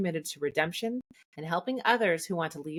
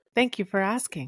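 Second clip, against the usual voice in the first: put-on voice assistant voice, higher; 3 semitones higher, 3 dB louder than usual. Answering a request to talk like Siri: Siri voice. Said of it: "Can you read it in the voice of Siri?".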